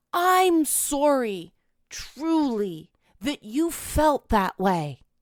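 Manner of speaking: honeyed, gushing, syrupy, overflowing sympathetic tone. Retelling what a therapist told him, in a mock-compassionate voice. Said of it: "in a voice absolutely overflowing with compassion".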